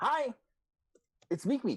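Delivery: squeaky, very high, loud kobold voice. Voicing a kobold messenger greeting players at the door: kobold messenger voice. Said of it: "Meek Meek is standing there".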